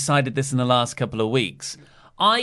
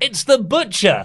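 screamed commentator voice, higher and louder; 8 semitones higher, 5 dB louder than usual. Retelling a moment from the show: imitating Excalibur screaming. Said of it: "Excalibur's now screaming".

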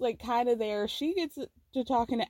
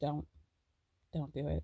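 soft, hushed half-whisper; 8 semitones lower, 8 dB quieter than usual. Recapping a hot tub scene from a show: imitating a half-whisper. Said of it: "Amanda just whispers".

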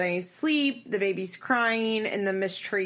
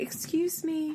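soft, hushed, pitched-up, uncomfortable, polite murmur; 9 semitones higher, 4 dB quieter than usual. Describing a daughter trying to get into her own fridge: imitating someone speaking quietly. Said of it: "quietly be like".

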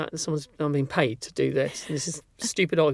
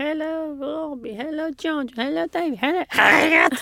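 imitated old woman voice, higher pitched; 12 semitones higher, 3 dB louder than usual. Retelling how grandma greeted the family: imitating grandma's voice. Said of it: "so it would be".

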